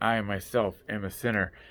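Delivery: ordinary delivery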